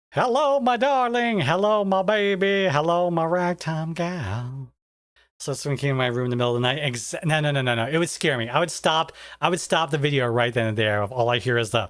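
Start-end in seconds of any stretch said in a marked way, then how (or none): 0.1-4.7 goofy phone-speaker voice, high, very slow. Speaker keeps a goofy voice, played as if it comes over a phone speaker. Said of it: "Just keep my goofy voice".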